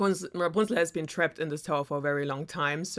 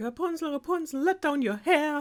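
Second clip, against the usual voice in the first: very high witch's calling yell, rising upward; 10 semitones higher than usual. Telling the Rapunzel story, the speaker voices the witch calling up the tower, imitating a yell. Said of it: "the witch of course would like yell up to the tower".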